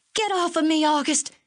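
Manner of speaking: shrill, very high yell, struggling and straining. Held in someone's arms, she tries to get loose: shouting, struggling to break free. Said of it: "she shouted".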